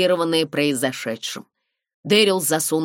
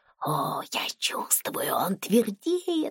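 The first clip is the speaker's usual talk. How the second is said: put-on whispered, slightly drunk, hushed, then hiccuping; 6 semitones higher, 7 dB quieter than usual. A woman speaks to a man while others watch a huge screen: whispering, hiccuping. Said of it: "зашептала Брайони и икнула".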